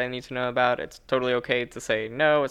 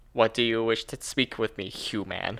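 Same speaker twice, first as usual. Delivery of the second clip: flat, mechanical, robotic delivery; 2 semitones lower than usual. Showing how speech sounds without names or honorifics, in a robotic voice. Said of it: "I try not to sound robotic".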